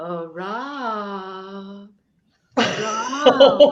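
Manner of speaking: loud, high, drawn-out parrot call. Telling about a family parrot calling to the grandfather, imitating a parrot. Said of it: "And then the parrot would go".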